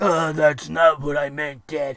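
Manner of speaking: low, deep, dropped voice. Acting out Vince McMahon answering Triple H in his office: Vince McMahon impression. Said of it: "I'm mixing my voices".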